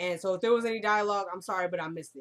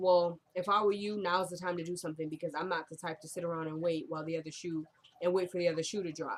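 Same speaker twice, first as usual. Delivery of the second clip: ordinary talk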